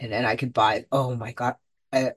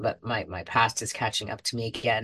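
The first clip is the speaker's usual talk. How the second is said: plain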